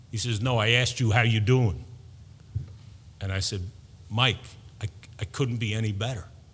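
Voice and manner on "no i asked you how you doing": put-on New York accent. Retelling a talk with his brother in a lobby, in Mike's New York accent. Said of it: "in his New York accent".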